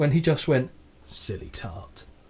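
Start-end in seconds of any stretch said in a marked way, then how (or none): 1.1-2.0 low, slow, soft whisper. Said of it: "it's almost like a Statham-esque whisper".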